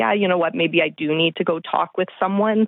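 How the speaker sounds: plain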